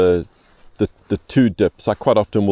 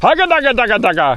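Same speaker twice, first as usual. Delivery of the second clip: loud voice, pitched higher; 4 dB louder than usual. Showing how to wiggle the rod tip to animate the fly: loud external voice. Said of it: "I do use my external voice".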